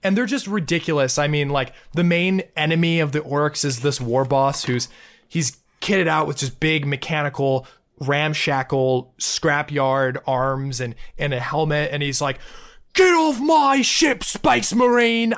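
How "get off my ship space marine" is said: put-on loud, hammy, thick UK backwater accent. Quoting a game's orc war boss shouting at a Space Marine, thick UK backwater accent. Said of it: "thick UK backwater accent".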